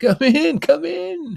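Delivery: joyful, very high, shrill, rough-edged shout. A bartender behind an empty bar welcomes the narrator in; shouted happily. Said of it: "he shouted happily".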